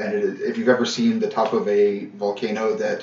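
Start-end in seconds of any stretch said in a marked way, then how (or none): none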